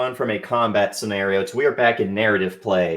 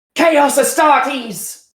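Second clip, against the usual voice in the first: shrieking, panicked scream, very high and loud; 5 dB louder than usual. Voicing a corporal warning the unit: screaming in character. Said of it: "she just screams".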